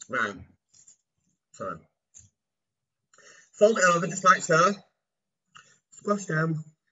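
talking through a mouthful, chewing through words. Back from washing hands mid-demonstration, talking with mouth full. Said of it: "With my mouth full of pork".

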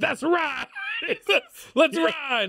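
play-acted very high, swooping, hyped-up animated whoop. Retelling how a man cheered on his idol: acting out pumped-up excitement. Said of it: "He gets really pumped".

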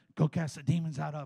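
hushed, under-the-breath voice. Retelling what the pastor said during the service: imitating someone speaking under his breath. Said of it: "under his breath".

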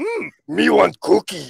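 raspy voice, pitch swinging all over. Explaining that Cookie Monster is really Batman: Cookie Monster voice. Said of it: "But then he goes".

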